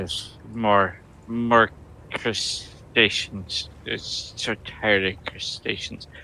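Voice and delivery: exasperated. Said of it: "he's just gonna just exasperatedly say".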